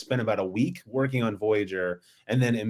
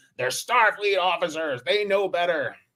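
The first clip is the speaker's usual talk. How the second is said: barking, pitched-up voice; 8 semitones higher than usual. Recapping an episode, answering a protesting crewmate, barking Janeway impression. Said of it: "barks at him".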